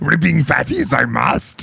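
high, creaky, put-on character voice.

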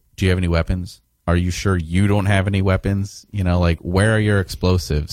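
ordinary delivery

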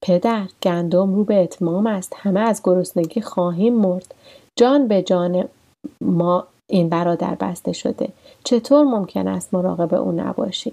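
ordinary delivery

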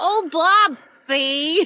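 loud, high-pitched cartoon mom voice, called out. Praising a favorite cartoon character's voice actor, then mimicking her: Linda from Bob's Burgers impression. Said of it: "the guy who does her voice just nails it like".

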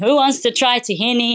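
put-on Israeli accent, called out. Retelling a farmers market stall with music blasting, Neri's screamed Israeli accent. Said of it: "in his Israeli accent".

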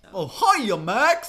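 very high, loud cartoon dog voice. Trying out an old impression in a chat about impersonations: Goofy impression. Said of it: "I used to have a pretty decent Goofy".

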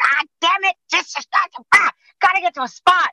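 very high, exasperated, frustrated shriek. Retelling stuck behind a truck, imitating a frustrated scream. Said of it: "I'm screaming".

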